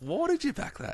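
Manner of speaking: mock kid voice, high with wide pitch swings.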